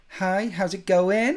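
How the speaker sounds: put-on California accent, high pitch, slow pace. Listing american accents, then imitating a californian: put-on california accent. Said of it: "Then you've got California".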